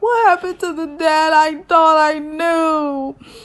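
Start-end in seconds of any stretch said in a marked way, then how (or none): 0.0-2.2 put-on tearful crying voice, higher. Retelling a scene in a car, imitating little Dougie crying. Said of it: "He's crying in the back seat".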